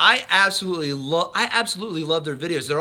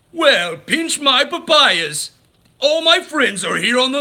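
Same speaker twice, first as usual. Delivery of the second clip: loud, raised, big put-on cartoon villain voice; 8 semitones higher, 6 dB louder than usual. On a live stream, trying out a Disney character, in a Pete voice. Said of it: "Let's see if I can do Pete".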